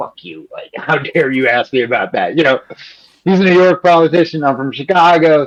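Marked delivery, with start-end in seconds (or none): 0.0-2.4 put-on mumbling under the breath. Recalling an interviewee staring back after a question; imitating mumbling under breath. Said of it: "mumbling under his breath".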